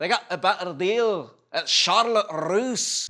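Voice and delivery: put-on, attempted Scottish accent. Commenting on a video set in Scotland, voicing a person in it with a Scottish accent. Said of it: "the only thing I could say in a Scottish accent".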